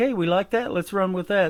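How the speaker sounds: ordinary talk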